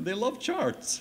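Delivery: put-on comic Swedish accent, very high. Retell what he said, fascinated by their interest in the charts, in a funny Swedish accent. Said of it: "funny in a Swedish accent".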